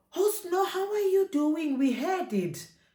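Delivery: high, excited, eager, gossipy chatter.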